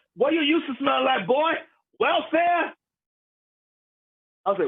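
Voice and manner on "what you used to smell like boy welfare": acted-out high, taunting, jeering shout. Retelling what a guy at a wrestling show yelled: imitating someone yelling. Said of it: "The guy yells at me".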